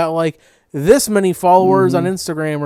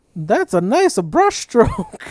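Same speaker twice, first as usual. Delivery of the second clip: sweet put-on cartoon plumber voice, higher; 6 semitones higher than usual. Acting out Mario teaching drawing on a painting show: sweet, nice Mario voice. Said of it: "he's just being real sweet and nice to you".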